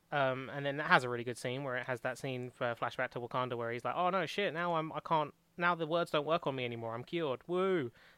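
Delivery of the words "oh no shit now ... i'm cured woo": sarcastic-sounding, cheering tone. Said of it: "the tone makes it sound like I'm being sarcastic".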